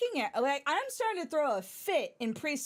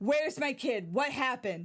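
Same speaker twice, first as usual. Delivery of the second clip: frantic, panicked, urgent, rushed voice; 2 semitones lower than usual. Retelling a dad running into the preschool: imitating a frantic dad. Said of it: "he's freaking out that something went down".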